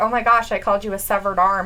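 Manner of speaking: ordinary delivery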